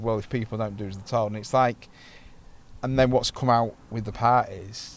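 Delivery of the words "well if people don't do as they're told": normal talking voice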